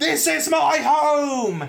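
very high, furious yell with "home" stretched long. Retelling a film scene where a giant flips out: imitating someone yelling. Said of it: "flipping out on them, yelling".

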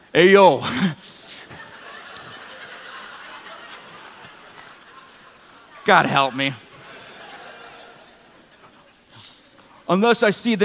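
put-on tough Philadelphia street accent. Telling the story of Doubting Thomas and playing his disbelief in a Rocky Balboa voice. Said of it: "Thomas sounds like Rocky Balboa".

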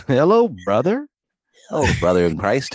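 chipper, sing-song tone with big pitch swoops. Speaker imitates a chipper man on the phone: Ned Flanders impression. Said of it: "Let me do that".

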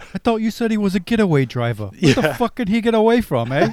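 horrible fake Cockney accent. Speakers quoting a scene from Snatch, in a horrible Cockney accent from Snatch. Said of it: "Apologies for our British accents".

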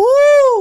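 loud, high-pitched loon cry. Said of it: "it's really high-pitched".

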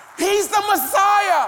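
loud, preacher-style shout.

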